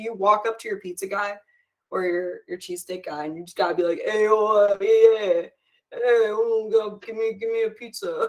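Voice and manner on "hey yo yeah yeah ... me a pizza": put-on slow, dragged-out, punch-drunk boxer drawl. Showing how to order at the pizza place: Sylvester Stallone voice. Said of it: "You gotta sound like Sylvester Stallone after".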